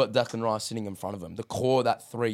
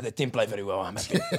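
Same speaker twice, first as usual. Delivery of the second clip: put-on sarcastic tone. Retelling post-match interview answers: imitating Arteta's sarcastic answer. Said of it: "doing the whole sarcastic Pep thing".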